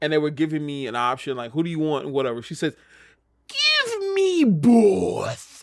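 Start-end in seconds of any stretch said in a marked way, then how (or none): 4.4-5.6 heavy stress leaned on "both". Retelling what she said when offered a choice of wrestlers, heavy stress on 'both'. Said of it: "putting so much emphasis on both".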